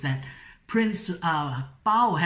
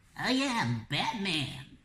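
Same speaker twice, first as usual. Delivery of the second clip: small, soft, tiny, squeaky little voice; 7 dB quieter than usual. Joking about how Batman would sound if he were squeaky: squeaky Batman voice. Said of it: "Can you imagine if he had a squeaky voice?".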